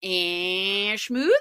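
nasal, nasally voice.

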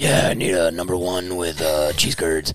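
aggressive superhero-style voice. Ordering at a drive-thru with the kids in the car, the speaker answers in aggressive Batman voice. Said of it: "Be Batman".

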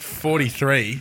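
forty-three drawn out and heavily stressed.

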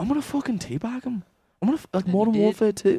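very high, soft, deadly serious tough-guy tone. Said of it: "Patty the Baddie, Josh, he was like".

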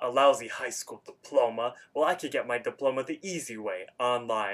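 play-acted, worked-up, angry complaining tone. Retelling a cartoon scene where Rigby gets angry: imitating Rigby angry. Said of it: "Rigby gets angry".

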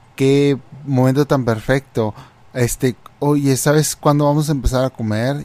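plain

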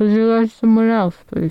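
speaking mid-bite, mouth full, chewing. Asked to summarise their pick, the speaker answers while eating a biscuit. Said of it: "I'm eating a biscuit".

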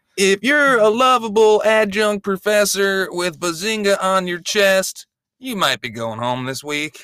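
very high, rhythmic list-joke cadence. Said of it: "Jeff Foxworthy, "You might be a redneck" cadence".

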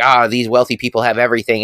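ordinary talk, nothing marked

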